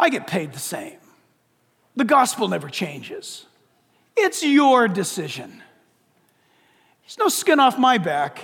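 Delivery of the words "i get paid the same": thick, dripping, heavy sarcasm in a low voice. A speaker inviting listeners to accept Christ, speaking very sarcastically. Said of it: "I'm being very sarcastic right now".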